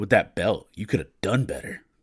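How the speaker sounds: put-on disdainful, scornful voice. Retelling what a belt maker said at the table: imitating someone's disdainful voice. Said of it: "with utter disdain in his voice".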